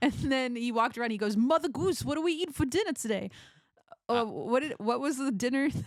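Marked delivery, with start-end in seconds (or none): 1.4-3.3 put-on heavy New York accent, laid on thick, pitched up. Retelling what the person in the goose costume asked mother goose, thick new york accent. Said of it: "had a really thick New York accent".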